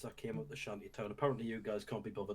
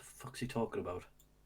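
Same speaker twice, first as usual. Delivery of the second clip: muttering under the breath. A player's character leans over to Terra during a conversation, muttered aside. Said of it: "lean into Terra and say".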